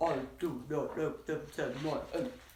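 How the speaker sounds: gurgled, bubbling voice as if underwater. Showing listeners how the underwater line sounds: underwater bubbling voice. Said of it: "It goes like this".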